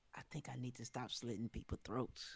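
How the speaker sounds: quiet whispering. Playing a character in a game, confiding to a fellow character, whispering. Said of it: "I'm whispering this".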